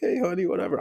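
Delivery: very high-pitched voice. Explaining matching how each person talks, imitating Kathy. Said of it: "Kathy talking to me like".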